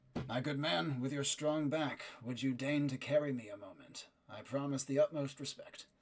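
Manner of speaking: very gentle, tender, soft, close murmur. Voicing a character speaking into a mount's ear: very gentle, quiet voice. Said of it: "you hear him very gently saying into Fanix's ear".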